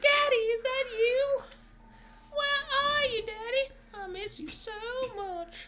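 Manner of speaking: put-on falsetto head voice. Reading a story aloud, voicing a character calling for Daddy, kind of falsetto. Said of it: "kind of falsetto".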